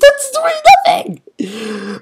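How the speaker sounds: high, loud panicked cry. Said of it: "I'm freaking out".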